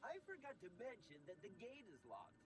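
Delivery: soft, high-pitched character voice. Replying in the game's guide voice about the locked gate: Blobbers voice. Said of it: "my Blobbers impression".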